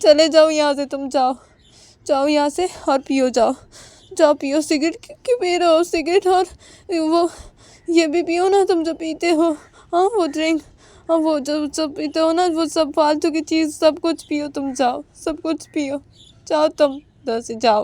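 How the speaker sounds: tearful, crying while speaking. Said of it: "उमा की आंखों से आंसू गिर रहे थे".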